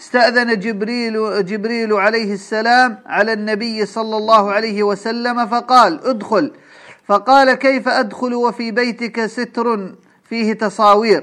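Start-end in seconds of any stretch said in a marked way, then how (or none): none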